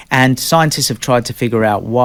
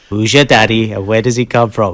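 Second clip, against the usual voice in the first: failed movie-star impression, Australian accent still showing; 3 dB louder than usual. Quoting a film line for others to guess, do a bad Arnold Schwarzenegger impression. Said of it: "it is Arnold though. Like, It's the accent's wrong. I'm still so Aussie".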